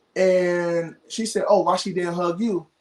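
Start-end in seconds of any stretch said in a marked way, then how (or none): none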